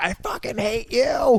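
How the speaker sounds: put-on, high, drawn-out scream. Acting out a beaten villain's last line from the dirt: acted screaming from the dirt. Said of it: "he's just screaming from the dirt".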